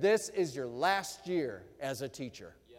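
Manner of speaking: put-on booming, authoritative voice. Recounting what God said to him every day, God's booming authoritative voice. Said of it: "the voice of God booming in my spirit".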